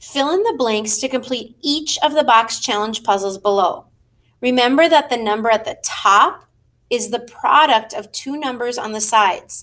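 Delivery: normal talking voice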